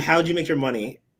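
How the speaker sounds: ordinary talk, nothing marked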